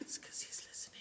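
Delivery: hushed, unvoiced, joking secretive whisper. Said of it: "You whispering?".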